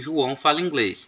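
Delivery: plain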